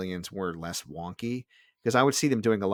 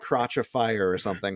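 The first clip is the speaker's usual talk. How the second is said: ordinary talk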